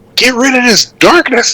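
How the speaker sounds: piercing, very high, acted shriek. Voicing a character in darkness who screams an order: character screaming. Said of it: "Leg screams".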